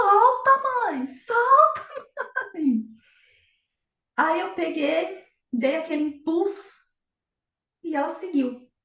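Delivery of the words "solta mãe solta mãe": put-on very high, stretched, drawn-out child's shout. Retelling how the daughter started yelling while learning to ride a bike: imitating a daughter shouting. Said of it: "ela começou a gritar".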